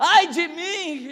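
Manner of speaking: high-pitched, crying-out shout. Speaker retelling a man's cry in the smoke-filled temple: imitating a man shouting. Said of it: "Começou a gritar".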